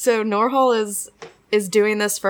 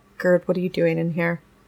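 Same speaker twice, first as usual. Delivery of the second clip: really quiet, soft, held-down, hushed voice; 6 semitones lower than usual. Speaking in character to Gerd in a bar: speaking really quietly. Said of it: "really quiet and just be like".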